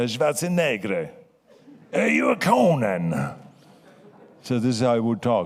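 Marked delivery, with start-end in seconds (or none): 0.0-3.3 put-on slow, swooping, stretched-out Italian accent. Retelling what a film producer said to him, in Dino De Laurentiis Italian accent. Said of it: "he had this Italian accent".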